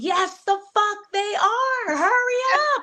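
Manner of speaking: high-pitched screaming. Recalling yelling at Eric that they were ahead; retelling her own scream. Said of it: "I just remember screaming and saying".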